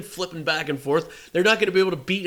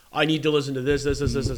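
normal talking voice

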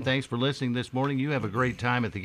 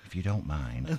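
pretend whispering, lower and quieter; 7 semitones lower, 5 dB quieter than usual. Imagining robbing a bank politely, mock whisper as a bank robber.

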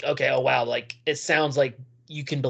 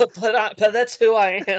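fake British accent, held throughout, pitched up; 8 semitones higher, 4 dB louder than usual. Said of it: "stop that British accent".

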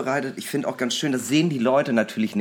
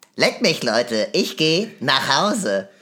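swooping, drawn-out cartoon boy voice with big swoops; 4 dB louder than usual. Speaker tries again the Cartman impression they did as a teen: Cartman impression. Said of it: "ich konnte auch mal sehr gut Cartman nachmachen".

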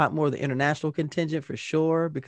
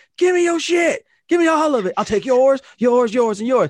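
very high, very loud, shrill screamed cry; 11 semitones higher, 9 dB louder than usual. Retelling a battle cry from playing a game: retelling a scream. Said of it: "I kept screaming".

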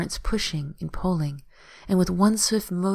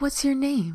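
pressing, urgent, pitched-up voice; 7 semitones higher than usual. Narrator voices a woman pulling a feverish boy from the tides, urgent. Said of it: "She says urgently".

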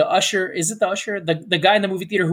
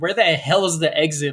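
plain

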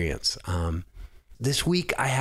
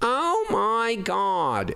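high, very slow, nasal put-on voice. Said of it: "the real nasally voice".

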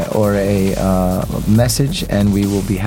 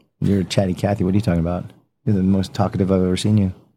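plain

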